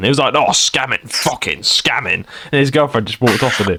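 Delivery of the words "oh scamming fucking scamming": put-on slow, leaned-into northern English accent. Imitating an angry stranger at a claw machine: imitating a northern english accent. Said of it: "he had a really, like, northern accent".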